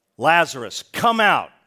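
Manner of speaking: very loud, direct, booming full-volume shout. Acting out a man shouting a command, shouted very loudly. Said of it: "As loud as I would think he could".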